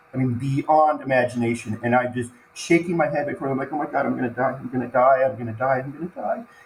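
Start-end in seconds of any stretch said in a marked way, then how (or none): 3.7-6.4 mock terrified, crying, frantic, repeated panic. Retelling a moment underwater of realizing death was near: reenacting own past panic. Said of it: "I can literally feel myself crying".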